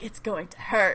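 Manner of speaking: put-on whisper. Retelling a scene where a character leans in by another's ear: imitating a whisper. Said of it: "he whispers by his ear".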